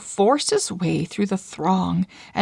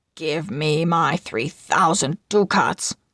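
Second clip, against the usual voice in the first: snarled, snarling; 3 semitones lower than usual. Narrator reading an outwitted moneylender demanding his money in court, snarling. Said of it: "The Duke of [name] sat in the judge's chair, / he snarled. / [name] hissed. / He agrees that if he doesn't repay [name] the moneylender, [name] can take a pound of his flesh".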